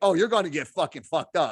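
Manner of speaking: mock laughing while talking. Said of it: "This is him cracking up, saying".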